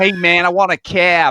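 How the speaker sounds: put-on New York accent, loud and slow. Retelling how a man asked for a cab in a proper new york accent. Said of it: "He's doing a proper New York accent".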